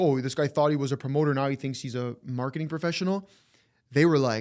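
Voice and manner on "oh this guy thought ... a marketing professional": ordinary talk, nothing marked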